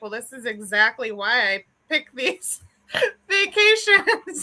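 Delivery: amused, words spilling out through a belly laugh. Retelling her own reply to the kids: retelling own words while laughing. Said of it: "I'm getting a good belly laugh out of it".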